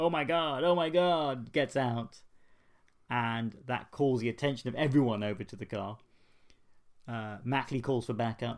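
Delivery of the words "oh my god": play-acted high, loud shocked scream, god drawn out. Recapping a story, the speaker acts out a character's shocked scream. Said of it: "Mackley screams".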